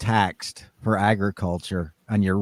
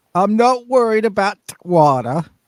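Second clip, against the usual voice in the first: bad put-on Northern English accent, higher, louder; 12 semitones higher, 6 dB louder than usual. Joking about Northerners' pride with a co-host, in a bad Northern English accent. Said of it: "That was terrible, by the way".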